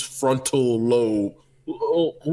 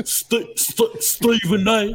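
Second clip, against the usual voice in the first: stuffy, congested, very slow, drawn-out voice; 7 semitones higher than usual. Showing how to do the voice: congested Kendrick Perkins voice. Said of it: "So you bring it to the front".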